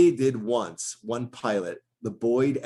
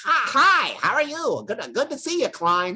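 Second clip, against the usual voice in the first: manic nerdy voice, much higher pitch; 13 semitones higher, 3 dB louder than usual. Speaker recalls playing the worm on a YouTube show, greeting Klein: over-the-top nerdy Worm voice. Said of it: "it was really over the top and manic and funny".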